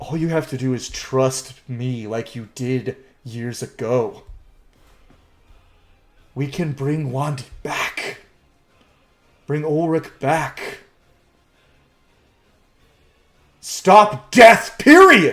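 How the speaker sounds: slow, coaxing, pleading villain voice. Voicing a villain holding out his hand, asking Eren to trust him. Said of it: "He's like".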